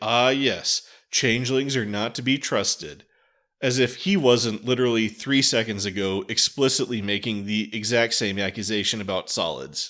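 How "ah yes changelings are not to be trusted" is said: put-on smug, knowing, superior, self-satisfied tone. Retelling a character's reply in an episode: imitating a smug character. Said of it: "Laws is smugly like".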